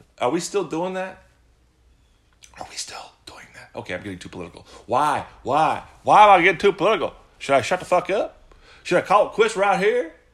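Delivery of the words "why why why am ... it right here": loud, high, hacky, put-on Southern accent. A speaker suddenly drops into a put-on Southern accent. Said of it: "why am I talking in a Southern accent".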